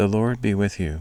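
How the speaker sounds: plain reading voice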